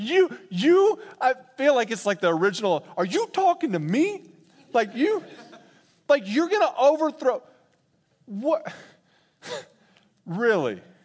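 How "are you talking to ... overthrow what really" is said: put-on derisive laughing tone, much higher pitch. Acting out the original laughter of derision, imitating a mocking tone. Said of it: "laughing in such a mocking tone".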